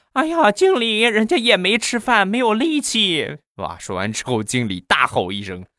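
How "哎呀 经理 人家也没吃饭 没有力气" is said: put-on very high, coquettish, coy, wheedling baby voice whine. Acting out a woman talking to her manager, in a mock-coy, cutesy voice. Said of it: "然后就很嗲".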